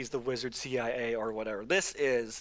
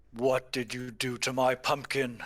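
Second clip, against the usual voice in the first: grand, theatrical, proclaiming declaiming. Narrating a game scene, voicing a character with a glowing staff, booming voice. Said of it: "in a booming voice".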